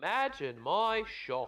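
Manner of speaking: British-sounding accent, high. Reacting to a statistic about respirators that failed testing: sounding british. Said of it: "you sounded so British then".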